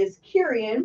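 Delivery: ordinary talk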